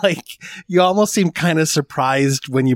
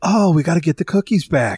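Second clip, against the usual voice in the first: earnest delivery with complete conviction; 4 semitones higher than usual. Quoting a line from the movie: Keanu Reeves delivering with conviction. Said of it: "he delivered it with such conviction".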